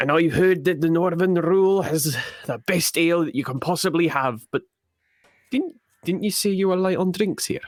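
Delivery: bad, butchered, clumsy put-on Scottish accent. Playing a dwarf who has just introduced himself and asks about drinks, in a bad scottish accent. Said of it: "I'm butchering a Scottish accent".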